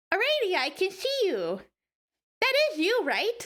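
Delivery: put-on high, swooping, sing-song cat girl character voice. Speaker tries the put-on voice again while playing, cat girl voice. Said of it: "let's see if I can do this again".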